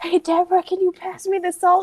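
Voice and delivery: stage whisper, pitched high. Speaker demonstrates how she still fails at whispering to someone, stage whisper. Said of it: "I only knew how to stage whisper".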